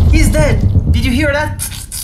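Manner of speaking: loud, high, triumphant shout.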